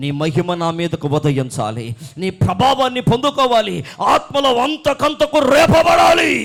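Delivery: climactic, loud shouting.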